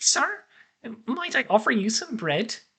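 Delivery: high, near-squeaky little voice. As Dunk pulls away from the group, someone approaches him: faint, almost squeaky voice. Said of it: "you hear a faint, almost squeaky voice".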